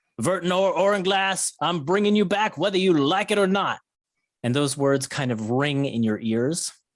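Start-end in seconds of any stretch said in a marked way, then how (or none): 0.2-3.8 high, shouted delivery. Voicing the bounty hunter as a player blacks out: bounty hunter shouting. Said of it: "the bounty hunter shouting".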